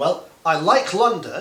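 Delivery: pitch rises at the end of London. Teaching English intonation with a contrasting example, rising intonation. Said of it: "anything positive you're saying should have rising intonation".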